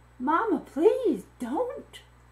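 high-pitched, earnest, begging tone. Reading Tai Pham's line to her mother, pleading. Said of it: "Tai Pham pleaded with her mother".

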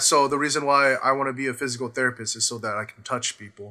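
dead-serious, flat monotone deadpan delivery. Acting out what he said when he got up, mock deadpan delivery. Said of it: "he says it with the most deadpan, like just straight face".

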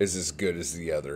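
ordinary talk

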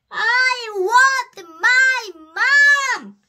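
high, very loud, very slow, drawn-out scream. Reading a story aloud as the little princess who can't sleep, screaming. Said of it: "she screamed".

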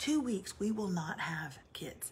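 hushed whisper. Parent talks about the kids' camp so the kids can't hear, whispering. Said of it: "I'm whispering because I don't want them to hear us".

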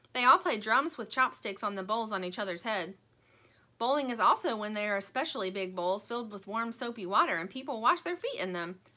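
ordinary delivery

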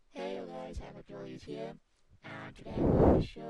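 layered robot-sounding voice. Tutorial maker plays back his layered voice test, robotic voice. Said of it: "this is what I mean about robotic voice".

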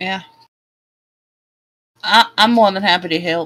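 put-on Southern accent. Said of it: "the Southern Act, you're stealing my thunder".

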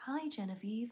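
home smart-speaker voice-assistant voice. Asked to say hi to Genevieve, the speaker greets her, Alexa voice. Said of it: "In an Alexa voice".

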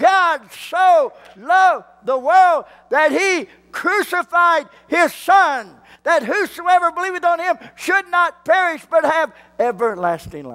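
loud, very high-pitched, excited preaching delivery. Preaching a sermon and getting excited: loud excited preaching. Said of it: "I apologize for getting a little too loud".

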